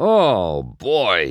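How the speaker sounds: cracking up laughing. Chick, driving up to join McQueen after a three-way tie, cracking up laughing. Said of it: "Chick said as he cracked up".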